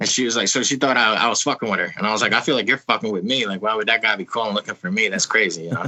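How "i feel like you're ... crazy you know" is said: ordinary talk, nothing marked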